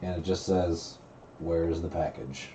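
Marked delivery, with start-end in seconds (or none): 1.4-2.5 mechanical, machine-like robotic delivery. A message comes over everyone's phones and communicators, in a robotic voice. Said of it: "it's a robotic voice".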